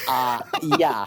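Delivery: commercial ad announcer-style line delivery. Retelling a beer commercial, imitating the commercial guy. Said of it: "And he goes".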